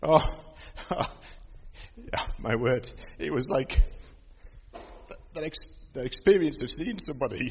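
tearful voice. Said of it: "Apologies for the tears".

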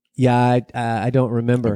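ordinary talk

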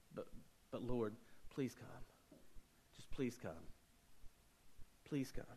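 put-on breathy whisper, desperate, begging pleading. Acting out a father in a story begging Jesus to come: pleading desperately. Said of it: "this father pleading with Jesus".

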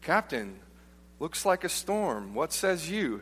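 play-acted, swooping, extremely heavy sarcasm. Telling a boat story, imitating his buddy speaking to the captain: retelling a sarcastic remark. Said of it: "he says in the most sarcastic tone".

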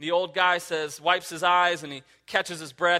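ordinary delivery

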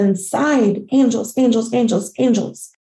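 ordinary delivery

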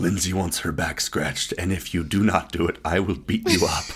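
spooky, very scary monster voice. Retelling how an older sister, pretending to be a monster, made demands, in a very scary voice. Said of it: "in a very scary voice".

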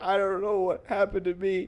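mock weepy, sobbing through words. Retelling what a crying man on the bus said: imitating a crying man. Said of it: "He's crying and stuff".

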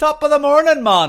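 very high, very loud put-on Jamaican leprechaun accent. Joking about dressing up for Saint Patrick's Day: put-on Jamaican leprechaun accent. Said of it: "A Jamaican leprechaun guy, I could totally do that".

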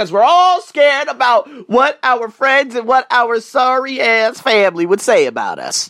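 country accent. Speaker talking to listeners in the morning, country accent. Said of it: "Got that country accent going this morning".

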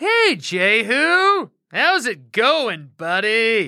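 falsely chummy, one word stretched. Narrating the story, Joram greets Jehu on arrival in a fake friendly voice. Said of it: "He said with a fake, friendly voice".

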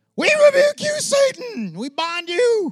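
very high, very slow, drawn-out, forceful commanding shout. Imitating people who get scared when praying: shouting loudly at demons. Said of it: "if I get loud and yell at demons".

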